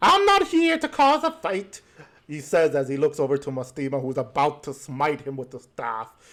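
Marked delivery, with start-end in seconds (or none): 0.0-1.8 impish character voice, higher, louder. Voicing an imp who steps out of the shadows: imp voice. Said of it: "you see a imp walk up out of the shadows as he goes".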